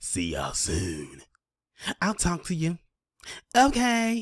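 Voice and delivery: play-acted sassy diva voice, swooping and very drawn-out. Mocking a podcaster's sign-off he just played: imitating Stephen A's sassy sign-off. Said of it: "sound all sassy like he a Real Housewife".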